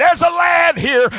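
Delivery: excited, loud, high-pitched announcing shout. Retelling a man bringing a boy to Jesus, acting out excitement. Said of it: "He's all excited".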